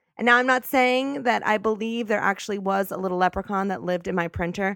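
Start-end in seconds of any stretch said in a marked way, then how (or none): none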